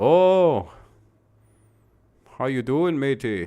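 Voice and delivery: fake Irish accent, a best attempt. Reacting to news the Big Ten is going to Ireland, in a put-on Irish accent. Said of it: "That's that's my best Ireland accent".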